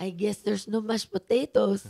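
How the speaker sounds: booming, very loud motherly voice. Recounting a childhood temper tantrum, imitating mom's voice. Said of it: "Mom voice".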